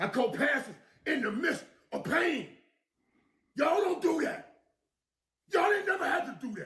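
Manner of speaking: angry, furious ranting outburst. Responding to people criticizing their work and record, crashing out. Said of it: "Michael Irvin crashing out".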